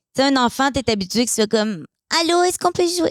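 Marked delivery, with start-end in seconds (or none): 2.2-3.1 put-on small child's voice, high-pitched. Talking about how a child sounds, the speaker demonstrates a high-pitched child voice. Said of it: "Je suis même pas capable de faire une voix aiguë".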